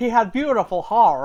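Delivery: put-on Appalachian accent. Describing a clip of a man who fights off Sasquatch: thick Appalachian accent. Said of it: "he has like a very thick Appalachian accent".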